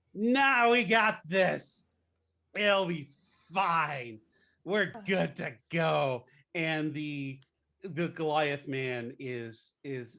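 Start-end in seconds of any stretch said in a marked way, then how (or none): 0.2-6.3 very loud shouting, higher pitch. In a tabletop scene, the halflings reassure everyone: very loud halflings. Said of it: "very loudly going".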